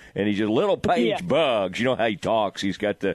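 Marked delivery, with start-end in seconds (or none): 0.5-1.8 Texas announcer voice, relishing the word. Retelling how a TV broadcaster relishes saying a player's name: imitating Jim Howler. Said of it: "Jim Howler has so much fun saying her last name".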